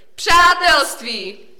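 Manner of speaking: very loud, very high joint outcry. Two boys answer the troll's riddle together, shouted. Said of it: "Oba vykřikli".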